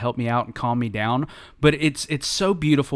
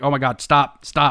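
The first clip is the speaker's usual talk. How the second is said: acted-out panicked voice; 4 dB louder than usual. The speaker retells grabbing and throwing stuff in a rush, retelling own panic. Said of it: "I'm panicking so much".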